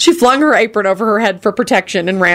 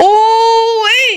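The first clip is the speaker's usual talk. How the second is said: very high, drawn-out, excited squeal; 13 semitones higher than usual. A woman sticks her head in the doorway and sees the room, screeching excitedly. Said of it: "she screeched excitedly".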